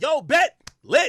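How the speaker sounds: put-on, very high, pumped-up, hyped excitement. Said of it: "Presser's hype like".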